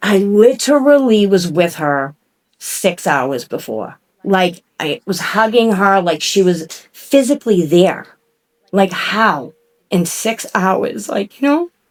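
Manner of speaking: slow, on the verge of crying. Recalling being with someone six hours before she ended up on life support, holding back tears. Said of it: "sorry, I'm not gonna cry".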